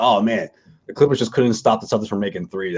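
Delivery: plain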